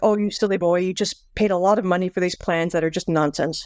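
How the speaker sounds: ordinary delivery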